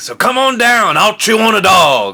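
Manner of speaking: high-pitched ghost character voice. Quoting a favourite movie line as a Beetlejuice impression. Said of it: "there's gotta be a, a good, uh, impression".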